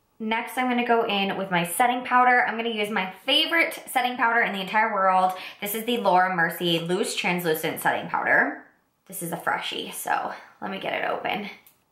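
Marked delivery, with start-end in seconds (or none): 9.1-11.5 gentle ASMR-style whisper. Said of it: "a makeup A S M R channel".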